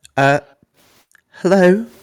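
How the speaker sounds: tiny, very high little voice. Game master voices someone inside answering the players' knock, small voice. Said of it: "You hear a small voice from inside".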